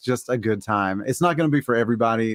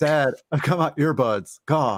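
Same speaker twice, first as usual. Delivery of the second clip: put-on slow, exasperated, fed-up kid voice; 4 semitones higher than usual. Acting out the kid answering the dancing dad: playing the dad's annoyed kid. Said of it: "He's like".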